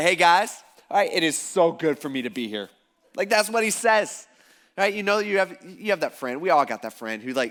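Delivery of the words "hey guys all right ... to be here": barging-in, overfamiliar, chummy buddy-buddy chatter. Retelling how Peter butts into the group: imitating Peter butting in. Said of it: "he's just like".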